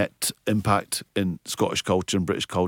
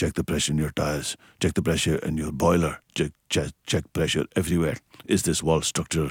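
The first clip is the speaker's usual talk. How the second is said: fake Glaswegian accent; 3 semitones lower than usual. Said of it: "So my dad spoke like this".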